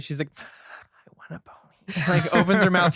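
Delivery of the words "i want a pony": soft, hushed, very slow, drawn-out delivery. Retelling how a little girl in a movie says her line: imitating a girl saying it quietly. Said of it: "She says it hella quietly".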